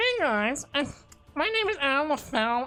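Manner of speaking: very high, put-on nerdy voice. Acting like a nerd introducing himself: put-on nerdy voice. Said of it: "what if I act like a nerd".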